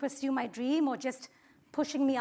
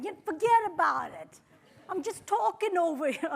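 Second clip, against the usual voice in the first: bad, unconvincing fake New York accent; 4 semitones higher than usual. Trying to fit in like a New Yorker, in a terrible New York accent. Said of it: "this is a terrible accent".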